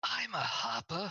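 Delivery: loud, high stage whisper. Narrating a woman letting the listener in on a secret, loud stage whisper. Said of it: "she whispers, but not really whispers, kind of with those loud, almost yellow whispers".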